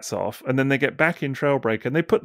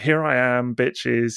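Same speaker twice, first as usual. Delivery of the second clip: put-on villain robot voice. Retelling how Megatron swaggers in: Megatron impression. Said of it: "He's just like".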